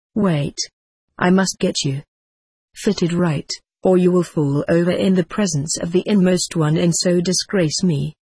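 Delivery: ordinary delivery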